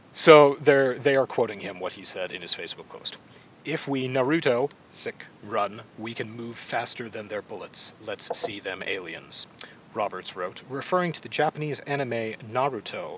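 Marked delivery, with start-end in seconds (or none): 3.6-9.4 serious, straight-voiced, dead straight read. Reading a quoted Facebook post aloud with a straight, deadpan voice. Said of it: "when I read it with a straight voice".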